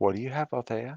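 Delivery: very, unsettlingly calm, pitched slightly up. Voicing a character asking althea a question: very calm, eerily so. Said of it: "he says very, very, very calmly, eerily so".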